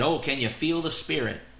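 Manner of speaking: mock derisive, teasing, mocking tone. Describing a concert crowd, retelling what a man said, in a retold mocking tone. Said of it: "he mockingly said".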